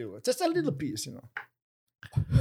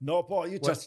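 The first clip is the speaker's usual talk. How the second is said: usual speaking voice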